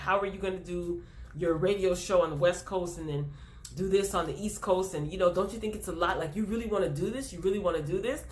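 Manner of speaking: plain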